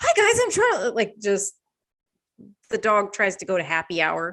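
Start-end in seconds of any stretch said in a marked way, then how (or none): 0.0-0.9 very high squealing voice, super friendly. Describing the voice they give their dog Charlie, doing a spastic friendly Charlie Day voice. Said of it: "spastic friendly".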